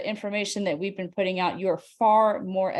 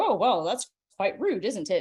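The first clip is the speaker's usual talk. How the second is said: put-on, sing-song British accent. Speaker retells how people reacted when shown pages of a book, in British voice. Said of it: "in their British voice".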